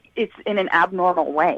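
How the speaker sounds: ordinary talk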